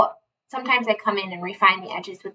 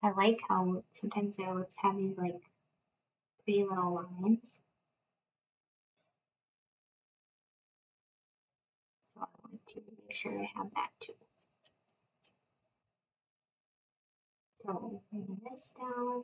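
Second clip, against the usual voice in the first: soft, quiet voice, getting quieter; 11 dB quieter than usual. Explaining how to paint a lip, talking quietly. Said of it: "I'm talking quietly again".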